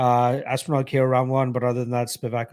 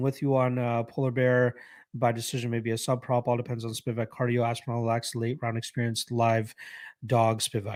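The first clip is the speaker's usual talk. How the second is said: ordinary talk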